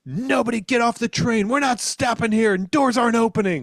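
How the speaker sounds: very high, loud screamed voice. Retelling what the train conductor announced: imitating someone screaming. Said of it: "he just screams".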